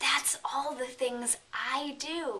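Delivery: slow, hushed whisper. Retelling whispering to a student behind a professor: retelling a whisper. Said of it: "I whisper to my student".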